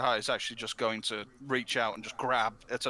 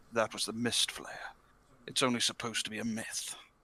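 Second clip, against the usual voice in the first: hoarse, rasping, husky whisper. Voicing a swordsman who just survived a beast attack: husky whisper. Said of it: "he just huskily whispers".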